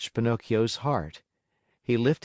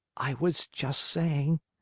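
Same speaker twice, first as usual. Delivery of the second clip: plaintive whining half-whisper; 4 semitones higher, 3 dB quieter than usual. Reading a story aloud, a puppet answering the Fairy: whining half-whisper. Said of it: "whined the Marionette in a whisper".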